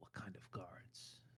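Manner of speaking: very quiet, breathy, hushed, barely voiced whisper. Game master voicing a character who looks at the player and whispers. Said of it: "he whispers".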